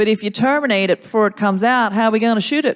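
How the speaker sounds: put-on good, believable, convincing Texas accent. Explaining to someone the standard Texan attitude, in a Texan accent. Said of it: "Very good accent as well".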